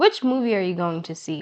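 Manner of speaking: ordinary delivery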